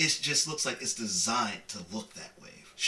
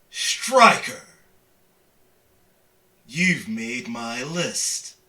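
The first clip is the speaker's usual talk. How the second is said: big, loud, booming voice; 2 semitones higher, 7 dB louder than usual. A character with a raised shovel addresses Striker, in a loud booming voice. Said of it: "in a very loud and booming voice goes".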